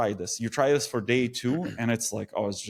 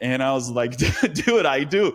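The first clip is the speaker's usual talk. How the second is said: ordinary talk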